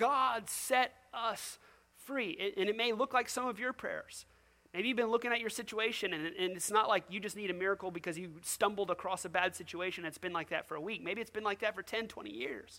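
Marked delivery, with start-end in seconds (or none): 0.0-2.3 mock pleading cry, very slow and pitched up. Acting out captive people crying out to god: imitating begging. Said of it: "and they're begging".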